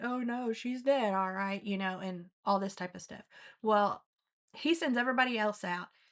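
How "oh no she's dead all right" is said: put-on sarcastic, scoffing, mocking taunt. Retelling how the crowd answered Jesus: imitating mocking tone. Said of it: "mocking him and being like".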